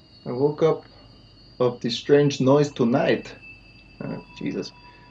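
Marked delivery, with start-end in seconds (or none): 0.2-3.3 put-on poor, off Russian accent. Reading lines aloud, putting on a bad russian accent. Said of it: "My Russian accent is way off".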